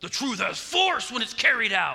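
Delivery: loud, energetic yell with full force. Showing how that line should be delivered next time: yelled. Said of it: "you just have to yell it".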